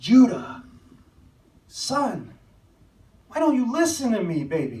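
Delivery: high, swooping, angry, pleading voice. A father retelling how he confronted his son, retelling his angry scolding. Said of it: "my face must have been red".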